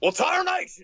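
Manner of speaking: put-on high cartoon voice. After suggesting a Southern accent test, the speaker does a Yosemite Sam voice. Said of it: "He should do Yosemite Sam".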